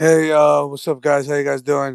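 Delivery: fake sad voice. Greeting the others after being given the floor, mock sad tone. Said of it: "why you sound so sad?".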